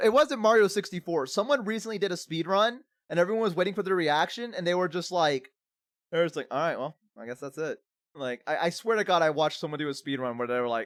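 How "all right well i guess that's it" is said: mock flat deadpan, quieter. Retelling how someone reacted after finishing a speed run, retelling a deadpan reaction.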